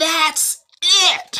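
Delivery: furious, very high-pitched angry scream. Retelling how Jill got mad after being snored on: imitating Jill screaming. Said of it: "and she screams".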